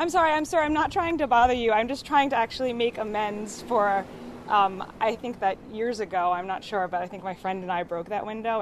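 ordinary talk

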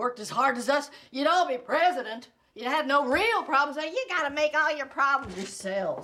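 put-on screaming. Acting out an outburst at a group who ask why they're being screamed at; mock screaming. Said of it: "Why are you screaming at us?".

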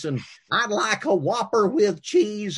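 silly, goofy, weird, high-pitched put-on voice. Ordering at the Burger King drive-through as a teenager with friends, weird voice. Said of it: "order in a weird voice".

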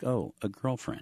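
pleasant, friendly tone. Speaker shows how to raise a topic with kids on the way home: nice voice. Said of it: "in this nice voice".

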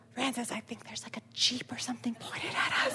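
soft, hushed whisper, half under the breath. Speaker retells waking a sleeping companion to point something out: whisper. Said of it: "So I kind of whisper to him".

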